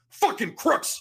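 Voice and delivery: acted, sudden angry outburst, man yelling very loud. Retelling how an angry man at the races yelled: imitating a man yelling as loud as possible. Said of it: "this guy just goes as loud as he can".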